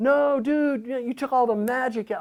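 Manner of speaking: mock very high, loud, squabbling teenage voice. Retelling an argument with the guitarist about the new solo: imitating himself fighting like a teenager. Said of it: "fighting like a teenager".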